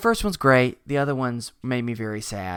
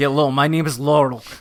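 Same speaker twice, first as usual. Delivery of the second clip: put-on Eastern European accent, louder; 3 semitones higher, 7 dB louder than usual. Playing Laurel in a made-up sitcom: Anfisa from 90 Day Fiancé voice. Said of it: "that's Anfisa from ninety Day Fiancé".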